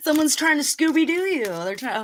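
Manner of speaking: sudden, urgent, high, excited yelling outburst. Reading tarot cards for someone, yelling. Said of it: "sorry to yell at you".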